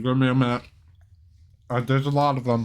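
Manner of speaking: talking with mouth full of food. About to read aloud, talking with mouth full. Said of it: "I have a mouthful of fries".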